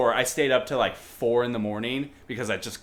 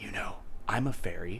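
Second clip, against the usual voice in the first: hushed, very quiet close whisper; 5 semitones lower, 9 dB quieter than usual. Retelling what a girl in fairy wings said: imitating a whisper. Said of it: "whispers in my ear".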